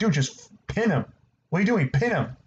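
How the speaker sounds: mild, half-hearted, urging half-shout. Recounting a match where Arn Anderson called out to an overconfident Cody, imitating Arn Anderson yelling. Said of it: "Arn Anderson was yelling at Cody like".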